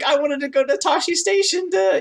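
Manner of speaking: whiny voice, pitched way up high. Quoting a character's first line: imitating whiny Luke Skywalker. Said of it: "weirdly whiny".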